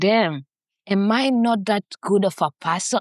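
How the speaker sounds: ordinary delivery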